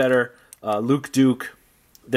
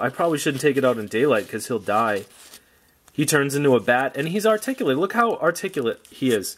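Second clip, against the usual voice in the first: ordinary delivery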